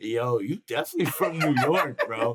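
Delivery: mock laughter in a man's manner. Retelling what a laughing man in the crowd said, imitating a laughing guy. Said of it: "the dude in front of us turns around laughing".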